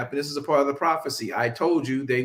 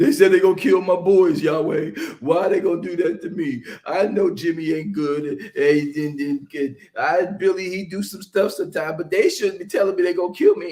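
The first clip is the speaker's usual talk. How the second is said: acted, loud, high, sobbing whiny crying; 5 semitones higher, 5 dB louder than usual. Retelling Samuel running to Yahweh in his feelings, imitating Samuel crying. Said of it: "runs to Elohim and starts crying".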